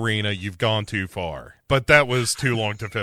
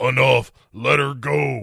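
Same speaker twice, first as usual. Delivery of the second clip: rough, creaky, raspy demon voice; 2 semitones higher than usual. Retelling the scene where Danny steps out to stop Ghost Rider, in a demon voice. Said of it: "in a kind of a demon voice says".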